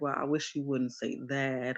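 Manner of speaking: plain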